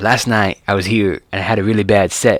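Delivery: flat, level, monotone deadpan delivery. Retelling a comedian's joke from a clip: Hedberg impression. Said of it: "I could do a Hedberg".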